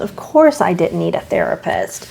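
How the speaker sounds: heavy, dripping sarcasm. Describing being the good child who needed no help: very sarcastic. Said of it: "I'm saying that very sarcastically".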